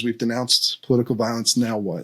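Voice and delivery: ordinary talk, nothing marked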